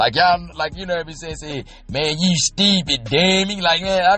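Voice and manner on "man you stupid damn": slow, drawn-out put-on Baltimore street accent. Imitating how people from Baltimore talk: imitating a Baltimore accent. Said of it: "ugliest fucking accent".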